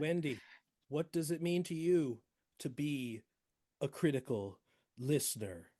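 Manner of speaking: very slow, deliberate, drawn-out, stretched delivery. A host asks a guest the last question of the show, very slow. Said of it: "because you said it so slow".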